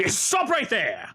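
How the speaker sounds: high, barked, shouted voice. Voicing a blade-wielding figure stopping the party: shouting a command. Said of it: "whips around the corner and says".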